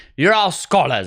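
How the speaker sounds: put-on heavy ironic British accent. Retelling what a substitute teacher used to say to students, heavy ironic British accent. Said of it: "She had this really like heavy, ironic British accent".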